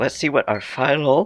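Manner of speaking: phlegmy, catching voice clogged with phlegm. Announcing the final check of the day: phlegmy voice. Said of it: "I got a little bit phlegmy there".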